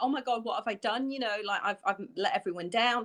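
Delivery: ordinary talk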